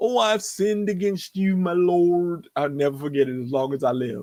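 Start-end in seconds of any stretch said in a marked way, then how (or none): 0.0-2.5 mock tearful, crying preacher voice, higher. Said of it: "he was crying".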